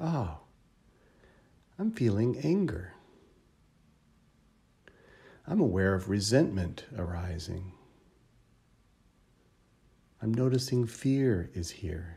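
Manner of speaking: caring, kind, gentle voice. Guiding listeners to name their emotions for themselves, in a kind and gentle voice. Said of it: "name it for yourself in a kind and gentle voice".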